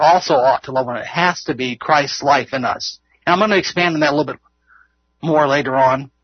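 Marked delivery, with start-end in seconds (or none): 0.0-1.1 "also" leaned on, then rattled off fast. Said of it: "The also stresses the word ought".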